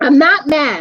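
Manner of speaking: plainly angry, irritated, annoyed tone. Telling a sleepless companion at bedtime that you aren't mad: sounding mad. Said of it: "You sound mad".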